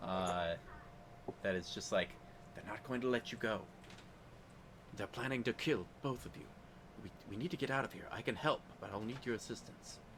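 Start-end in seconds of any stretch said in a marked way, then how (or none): 2.5-10.0 hushed, quiet half-whisper. Voicing a stranger in the next cell who half-whispers to prisoners: half-whispering prisoner voice. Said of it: "you hear a, a whisper from the next cell".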